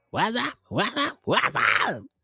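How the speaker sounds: very high, swooping voice. Trying out a show intro just like the Martin TV show: Martin intro voice. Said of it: "Just like from the Martin T V show".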